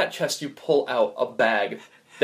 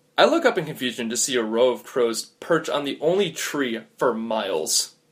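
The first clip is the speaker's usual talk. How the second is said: plain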